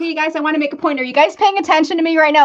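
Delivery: playful, quick and high. Showing how they might humorously grab listeners' attention, playful humorous. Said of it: "use it a little bit humorously".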